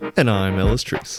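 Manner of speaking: on-air radio announcer voice, with flair. A co-host introduces himself at the start of the show's episode, radio announcer voice. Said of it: "Very radio voice".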